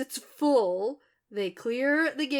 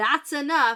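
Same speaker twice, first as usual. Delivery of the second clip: put-on shout, louder; 5 dB louder than usual. Retelling a scene where Rand stops the crowd: imitating Rand shouting. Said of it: "Rand has to shout at them".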